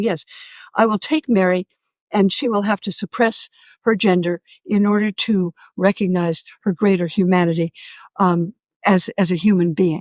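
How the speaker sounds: plain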